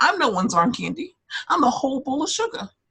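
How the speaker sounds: put-on loud, high pitched, heavy New York accent. Reading a quote aloud for the other speaker to rate, in Sonja Morgan New York accent. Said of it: "Do you like my New York accent though?".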